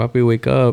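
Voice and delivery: calm, gentle, soothing, coaxing voice. Retelling waking someone up in the morning: imitating own soothing voice. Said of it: "in a soothing voice".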